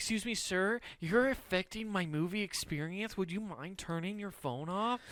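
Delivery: put-on, very soft, quiet, courteous, nice tone. Showing how he should have asked someone at the movie: nice polite tone. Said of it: "in a nice tone like".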